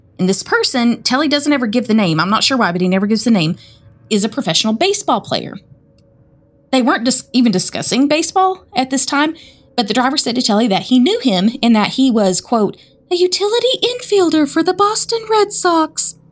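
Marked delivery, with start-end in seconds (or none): 13.1-16.1 spooky voice, pitched very high. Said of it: "in the spookiest voice he'd ever heard".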